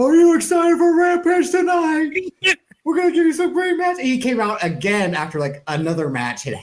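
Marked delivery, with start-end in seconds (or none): 0.0-4.0 high, loud, pumped-up hype voice. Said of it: "came out to hype up the crowd".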